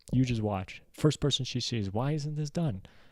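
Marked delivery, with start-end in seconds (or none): 1.9-2.8 mock, accusing, high-pitched scolding voice. Acting out Mom blaming the first person she sees: imitating Mom yelling. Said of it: "Why are you yelling at him?".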